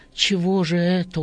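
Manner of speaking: ordinary delivery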